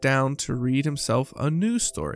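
ordinary delivery

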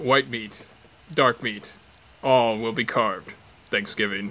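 deep, dramatic movie-trailer narrator voice. Sharing a quote of the day from a favorite movie, doing the Grindhouse voiceover impression. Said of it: "That was a great impression there".

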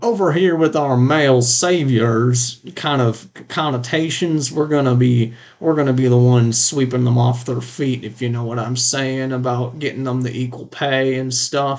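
put-on Texan accent. Asked to try a line again with a better accent, Texan accent. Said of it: "I see your time in Texas".

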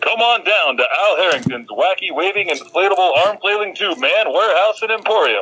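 commercial announcer voice with sales-pitch delivery. Asked to go again, the announcer delivers his pitch in a commercial announcer voice. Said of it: "He's such a great announcer".

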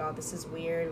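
ordinary talk, nothing marked

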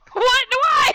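sudden, loud, very high-pitched yell. Reacting to a claim that toilet dreams relate to sexuality: yelling. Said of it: "I'm sorry, I just yelled".

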